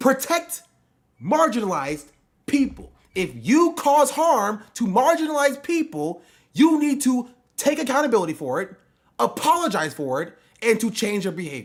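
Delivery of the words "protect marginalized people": slow, deliberate, spelled out word by word. Repeating their goal to the person addressed, said slowly. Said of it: "I will say it slowly for you".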